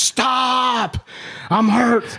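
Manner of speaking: very high, drawn-out pained cry, acted. Retelling being kicked on the ground after an injury: retelling a scream. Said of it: "I'm screaming at the top of my lungs".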